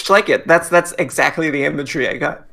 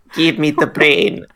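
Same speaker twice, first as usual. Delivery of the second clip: put-on evil Eastern European scientist accent. Voicing one of the scientists in a comedic scene: evil Eastern European scientist voice. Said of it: "evil sort of pseudo Eastern European scientists".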